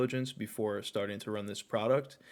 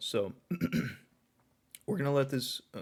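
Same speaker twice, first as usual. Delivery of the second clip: voice breaking and cracking mid-sentence; 4 semitones higher than usual. Explaining a test ad campaign to viewers when the voice cracks. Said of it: "excuse me, voice crack".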